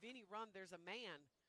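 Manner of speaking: ordinary talk, nothing marked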